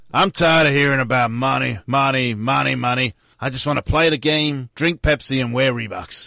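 put-on exasperated American accent. Quoting a basketball player on money again: bad Shaquille O'Neal impression. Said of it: "Shaq, on money".

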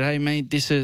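ordinary talk, nothing marked

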